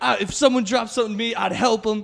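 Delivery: mock, very high, worked-up ranting man's voice. Retelling what a man on the subway shouted at everyone: imitating a ranting man. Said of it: "he's doing, like, a whole rant".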